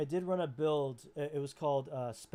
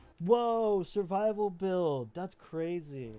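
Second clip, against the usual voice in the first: slow, sarcastic, facetious put-on amazement; 3 semitones higher than usual. Reacting to another speaker listing class builds: sarcastic mock amazement. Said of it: "I'm being sarcastic and fishy-, facetious".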